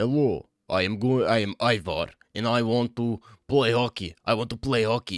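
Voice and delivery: put-on Russian accent. Speaker mimics how Russians sound speaking English, mock Russian accent. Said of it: "Russia, it's like".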